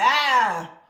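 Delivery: blurted out loud, eager and excited. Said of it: "Jacob like".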